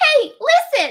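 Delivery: squealing, high-pitched and loud. Told Cortana is their Navi, trying out a Navi voice. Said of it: "I can do a Navi voice if I can get high".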